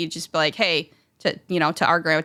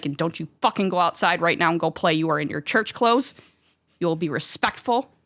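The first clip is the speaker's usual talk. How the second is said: put-on old woman voice, mock stern scolding tone. Speaker recalling days with grandma before church, imitating grandma scolding. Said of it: "And she's just like".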